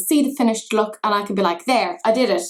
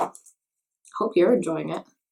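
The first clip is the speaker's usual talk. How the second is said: pointed, passive-aggressive delivery; 4 semitones lower, 4 dB quieter than usual. Talking to viewers while doing makeup on camera, in a passive-aggressive tone. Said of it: "saying that in such a passive-aggressive way".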